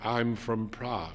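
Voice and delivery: soft, bored, distant, uninterested, faraway voice. A girl answers a man asking where she is from, in a bored, faraway voice. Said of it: "Speaking in a bored, faraway voice, the girl said".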